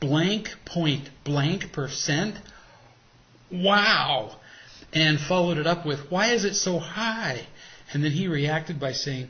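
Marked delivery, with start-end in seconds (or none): 0.0-4.4 slow, stunned, disbelieving shock with drawn-out wow. Retelling hearing the high interest rate for the car, retelling a shocked reaction. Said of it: "in a voice filled with shock".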